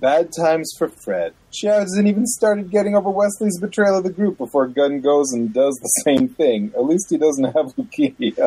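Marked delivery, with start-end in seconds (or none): none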